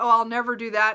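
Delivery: normal talking voice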